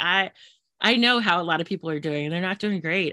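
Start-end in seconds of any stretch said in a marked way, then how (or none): none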